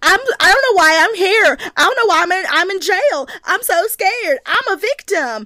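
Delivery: high, slow, put-on Southern drawl. Recapping Victoria talking to Johnny, in Victoria's put-on southern accent. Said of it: "when she puts on her southern accent".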